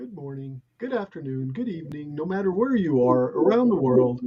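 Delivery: gentle, quiet, low, pleasant voice. Speaker greets listeners around the world in a nicer, quieter voice. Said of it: "That's my nicer, quieter voice".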